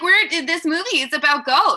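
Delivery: put-on excited Australian accent. Imitating an excited film director talking about his movie: imitating James Wan, excited jolly Australian. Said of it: "he's always like".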